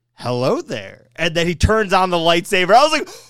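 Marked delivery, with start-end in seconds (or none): 0.2-1.1 mock, very cool, composed, effortless delivery. Retelling his son starting a lightsaber duel: imitating a cool delivery. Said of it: "My son then very coolly says".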